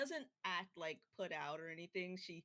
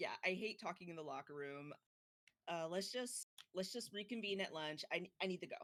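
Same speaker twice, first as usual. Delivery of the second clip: ordinary delivery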